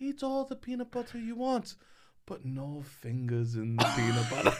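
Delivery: put-on Swedish accent. Quoting what she used to tell you and your sisters, in a swedish accent. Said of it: "This is [name]'s attempt at a Swedish accent".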